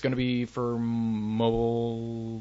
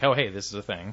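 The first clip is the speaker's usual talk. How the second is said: usual speaking voice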